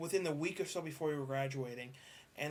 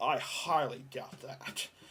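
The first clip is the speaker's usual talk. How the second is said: annoyed, very drawn out, mad and doubting; 3 semitones lower than usual. Retelling a teacher's reply to students out in the hall: imitating an angry teacher. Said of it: "Remember how mad she was getting?".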